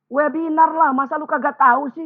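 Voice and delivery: very high voice, a whole octave up. Acting out a wife answering her husband's question, an octave higher. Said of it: "Istrinya jawab oktav di atasnya".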